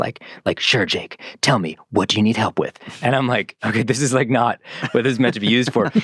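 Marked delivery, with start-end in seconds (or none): 0.0-2.8 put-on, mock whispery voice. Describing an ai girlfriend app answering a homework request, imitating a whispery asthma voice. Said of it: "whispering to me in her like asthma voice".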